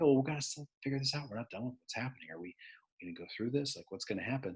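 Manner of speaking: very quiet, low, hushed, brought-down voice. Showing how they bring their voice down once a class goes quiet, voice brought down low. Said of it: "I start talking down here and say".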